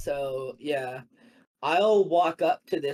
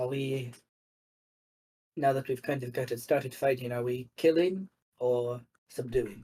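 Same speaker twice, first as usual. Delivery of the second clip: low hushed mutter kept under the breath. Asking a companion mid-fight whether to kill or subdue: said under breath in Elvish. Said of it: "I'll say under my breath in Elvish".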